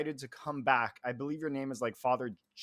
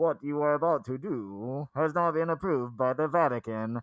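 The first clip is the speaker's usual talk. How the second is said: loud robotic text-to-speech voice; 5 dB louder than usual. Reviewer reads a game's tagline aloud in a Microsoft Sam voice. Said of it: "my best Microsoft Sam voice".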